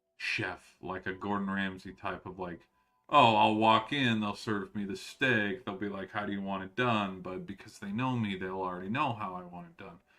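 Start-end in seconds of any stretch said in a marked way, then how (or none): none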